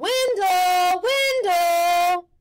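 very high, loud hollering, carrying across distance. Calling out for someone who wandered off, hands cupped, yelling a name. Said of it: "cupped his hands around his mouth and yelled".

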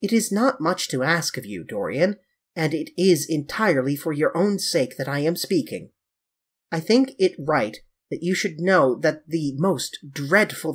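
ordinary delivery, nothing marked

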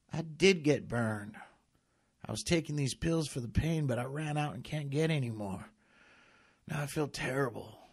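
high, pained groaning moan. Narrator reads a sick uncle answering a visitor, moaning. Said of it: "Uncle Robert moaned".

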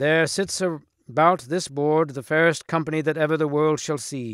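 ordinary delivery

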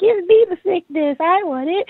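high, far-off, greedy mock pleading.

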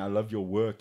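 ordinary delivery

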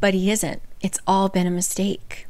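plain

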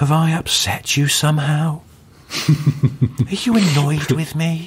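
high-pitched, drawn-out, slow and soft-toned voice. Retelling a comedian's impression of Louis Theroux: Louis Theroux soft voice. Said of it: "when he does that quite soft voice and he goes".

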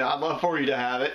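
plain

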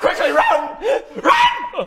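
high, loud, fast panicked shout. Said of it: "I'm going".

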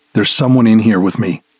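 harsh, hissing whisper. Narrator reading a man's line over the radio channel, in a harsh hissed whisper. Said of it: "he hissed in a harsh whisper".

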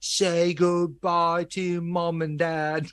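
put-on high-pitched, very slow, drawn-out British accent. Retelling film footage of a vocal take, put-on British accent. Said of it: "how much British spin he's putting on".

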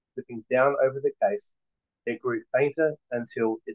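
ordinary delivery

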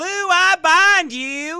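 very high, very loud, booming, slow, drawn-out Southern drawl. Showing the same line said with a Southern lady's accent. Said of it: "when you say it like this".

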